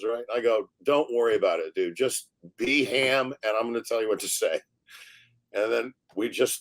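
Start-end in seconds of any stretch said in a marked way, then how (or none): none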